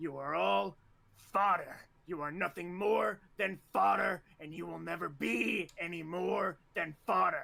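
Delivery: rough, scornful, contemptuous drill instructor voice. In an actual play, a training officer addresses new cadets: contemptuous drill instructor voice. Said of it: "You're going to cry. You're going to bleed. And I am going to relish every second of it. I will be the first thing you think of in the morning and the last thing you think of at night. Every / He, as".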